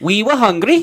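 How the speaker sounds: put-on German accent. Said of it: "should I do a German accent?".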